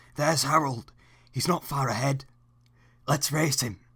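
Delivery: hushed voice. Reading the driver's line in a storybook aloud, whisper. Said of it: "whispered his driver".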